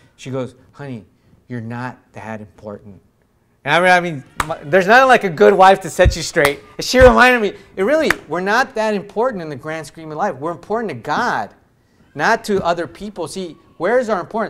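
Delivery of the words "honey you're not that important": put-on stoic, matter-of-fact, soft and calm. Retelling how his wife calmed him down: imitating a stoic reply. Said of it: "she just turned to me real stoic".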